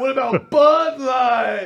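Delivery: very high, loud, whooping hype announcer voice. Retelling how a derby announcer worked the crowd: imitating a hype announcer. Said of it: "And then he'd be like".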